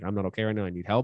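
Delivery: ordinary delivery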